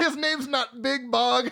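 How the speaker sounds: laughing.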